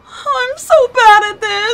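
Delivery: tearful, crying voice. A learner driver named [name], swerving during a driving test, speaks while crying. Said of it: "stop crying and keep your eyes on the road".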